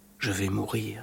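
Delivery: peaceful, certain murmur. Seeing the priest arrive, she murmurs with calm conviction. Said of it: "elle murmura avec une conviction paisible".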